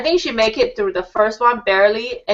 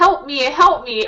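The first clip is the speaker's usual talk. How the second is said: mock tearful crying voice, higher; 4 semitones higher than usual. Retelling how a woman stuck in an obstacle begged: imitating someone crying for help. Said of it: "But she was crying, and she would say".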